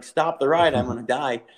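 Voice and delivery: ordinary talk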